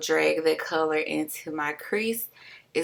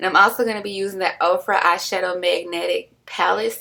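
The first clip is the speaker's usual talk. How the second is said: ordinary talk, nothing marked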